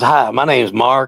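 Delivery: put-on soft-spoken Texas accent. Retelling meeting a massive man who introduced himself, imitating Mark, soft-spoken. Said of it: "he was so soft spoken".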